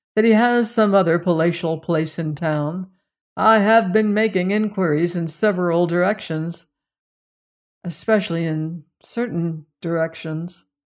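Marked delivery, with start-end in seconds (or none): none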